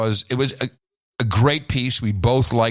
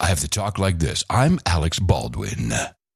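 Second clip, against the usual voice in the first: public radio announcer voice and manner; 6 semitones lower than usual. Mocking a podcast promo by imitating Alec Baldwin as an NPR-like guy. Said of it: "he's an N P R-like guy".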